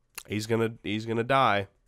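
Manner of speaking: usual speaking voice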